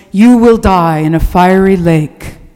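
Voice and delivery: slow, booming mock pulpit preacher voice. Recalling a man who kept turning to him during commercial breaks: imitating a booming voice. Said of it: "say in a booming voice".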